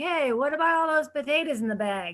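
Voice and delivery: put-on strong Boston accent. Recalling a line from a college play, in a major Boston accent. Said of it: "I had this major Boston accent".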